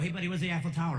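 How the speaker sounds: usual speaking voice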